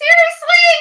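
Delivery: voice shooting very high, loud incredulous squeak. Reacting to Betty's comparison, voice going way up. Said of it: "Why is your voice going up ninety-seven octaves?".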